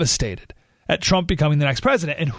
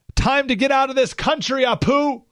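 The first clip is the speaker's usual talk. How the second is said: high mock yelling. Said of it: "a group of guys yells over".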